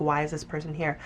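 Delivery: normal talking voice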